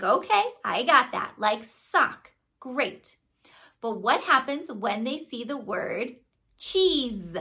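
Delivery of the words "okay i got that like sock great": ordinary talk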